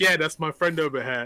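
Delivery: slick, smooth, easy smooth-talker voice. Retelling how Larry chatted up girls: imitating Larry's smooth talk. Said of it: "this how smooth Larry is".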